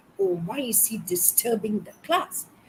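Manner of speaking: plain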